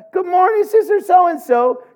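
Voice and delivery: sugary, high, chirpy, smiling delivery.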